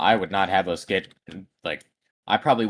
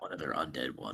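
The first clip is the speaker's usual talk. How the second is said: very quiet voice, lower and quieter; 5 semitones lower, 13 dB quieter than usual. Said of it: "I'm gonna very quietly kind of".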